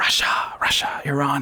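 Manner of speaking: mock secretive, hushed, voiceless whisper.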